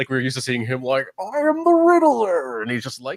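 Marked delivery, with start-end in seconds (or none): 1.2-2.6 very loud, slow, high-pitched belted delivery. Imitating a streamer the way he usually plays a role: Riddler impression. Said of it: "sneakily good at all sorts of impressions".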